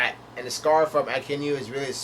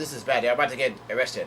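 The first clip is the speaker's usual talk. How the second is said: plain reading voice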